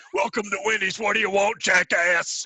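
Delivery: very loud, very high, shrill, booming wrestling promo. Imagining a drive-through worker talking like a wrestler, in a pro wrestler promo voice. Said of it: "talk to you in the realm of like a pro wrestler".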